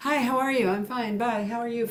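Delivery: high, offhand, tossed-off delivery in passing. Showing how people ask how others are: greeting said in passing. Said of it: "just do it in passing".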